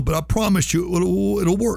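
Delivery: moved, emotional voice, high and slow. Host closes the show, thanking listeners: getting emotional. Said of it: "I'm getting emotional".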